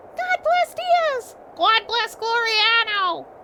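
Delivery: silly cheering voices. Telling the story, the speaker voices the humans cheering for Diaz: funny crowd voices. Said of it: "I had to give them funny voices".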